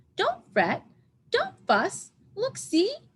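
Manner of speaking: very high, squeaky, swooping sing-song voice. Narrator reads Mouse's reply to the bear in a squeaky Mouse voice. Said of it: "Mouse squeaks".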